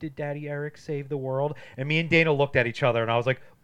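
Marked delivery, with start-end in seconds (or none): 0.0-1.5 mock tearful crying, somber and sweet. Retelling a film scene where the girl is crying: imitating Wen crying. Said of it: "and she's crying".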